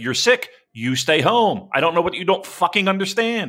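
put-on stern telling-off. Describing a woman enforcing workplace compliance on sick staff; imitating her scolding. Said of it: "she's got to be like".

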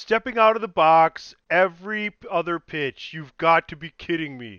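loud, clumsy mock announcer voice. Wanting Bill Walton in a basketball cast, doing a Bill Walton impression. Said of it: "Bill Walton. It's bad".

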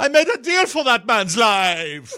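high-pitched, with life stretched out long. Doing an impression of a movie scene line, Christoph Waltz voice. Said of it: "I'll do a Christopher Waltz impression of that scene".

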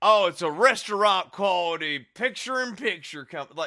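mock, dripping sarcastic delivery. Mocking a product ad, the speaker quotes its line, mimicking dripping sarcasm. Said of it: "You could hear the sarcasm dripping".

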